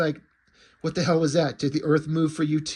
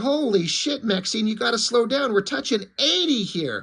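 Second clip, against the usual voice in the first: mock, high-pitched, full-on screaming; 7 semitones higher than usual. Retelling a comic scene, a passenger on a speeding runner: acting out a scream. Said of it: "he's screaming".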